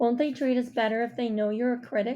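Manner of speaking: ordinary delivery, nothing marked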